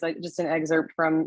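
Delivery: plain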